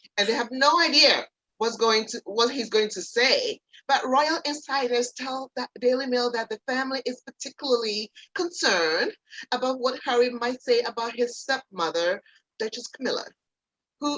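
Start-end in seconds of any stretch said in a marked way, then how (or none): 12.6-14.2 fake, put-on English accent. Reading out royal family gossip, slipping into a fake english accent. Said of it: "that's my fake English accent".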